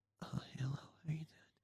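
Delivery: whisper so faint it's almost silent. Retelling a girl's reply to the boy beside her, in a faint whisper. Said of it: "Like whispering".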